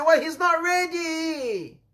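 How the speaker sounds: slow, high, sorrowful, hesitant and drawn out.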